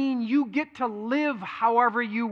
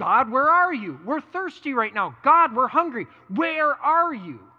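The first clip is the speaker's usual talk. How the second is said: acted-out bickering, griping, demanding complaint. Retelling how the people cried out to God: imitating complaining people. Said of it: "they complain and they go".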